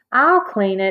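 ordinary talk

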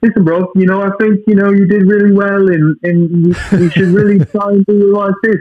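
very high, prim, tight put-on British accent. Retelling how an actor coached a co-star: tight british accent. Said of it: "talking in a tight British accent".

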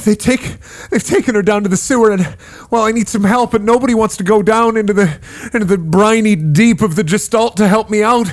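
flustered, breathing heavily. Wounded man begs the adventurers to help find his kidnapped wife; flustered, breathing heavily. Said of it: "and a flustered man flies through. He looks like he's covered in blood or wounded, and he's sitting there breathing heavily".

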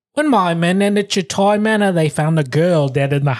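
fake Australian accent attempt. After being told the last try sounded Southern, trying again: attempted Australian accent. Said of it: "Let me try one more time".

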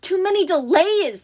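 high, booming, roaring giant monster bellow. The Cyclops, pawing at the cloth on the loom, bellowing. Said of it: "the monster bellowed".

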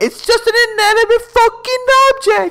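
put-on very high-pitched voice with British accent. Retelling a quotable movie scene, a speaker voices the wife: British voice for the wife. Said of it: "I like your British voice for the wife".

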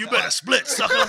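very loud, high-pitched 70s blaxploitation movie-star voice. Describing how a Gears of War character talked, 70s blaxploitation movie-star voice. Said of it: "he spoke like a 70s blaxploitation movie star".

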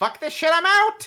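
very high, shrill, loud yelled outburst. Game master voicing an enemy just before he jumps off the roof; yelling. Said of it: "He yells".

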